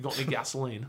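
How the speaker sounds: really poor, clumsy, put-on Australian accent. Explaining how an actor's accent changed a word, bad Mel Gibson Australian accent. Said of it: "That was a really shitty Australian accent".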